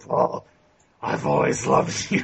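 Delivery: whispered undead zombie voice. Narrating the game, the speaker voices a zombie dragging a character under: zombie whisper. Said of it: "the zombie whispers in Paul Mannion's ears".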